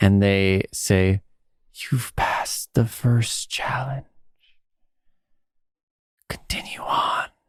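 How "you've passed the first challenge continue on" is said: hushed, faint, breathy whisper. Voicing mysterious voices that speak to the players: faint whisper. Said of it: "You hear those faint whispers again".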